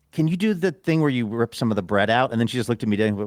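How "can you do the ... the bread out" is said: patronizing tone, audibly sheepish and embarrassed. Retelling ordering food at a counter: imitating own patronizing request. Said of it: "I was almost patronizing in a way".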